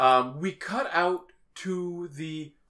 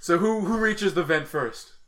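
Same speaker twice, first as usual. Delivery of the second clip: ordinary delivery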